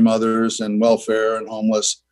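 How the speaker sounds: ordinary talk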